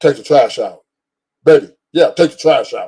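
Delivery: put-on, blunt, bossy, authoritative man-like voice. Showing how not to ask a partner to take the trash out: mock authoritative command. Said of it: "like a man would talk to her and say".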